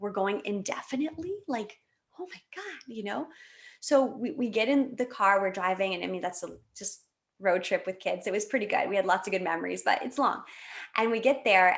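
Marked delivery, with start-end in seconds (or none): 0.0-2.8 overwhelmed, freaked-out, rising, emotional panicked disbelief. Retelling learning the trip might be indefinite: retelling her own emotional panic. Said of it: "And I'm really emotional".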